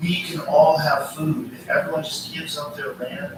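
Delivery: ordinary talk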